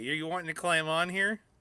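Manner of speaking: ordinary talk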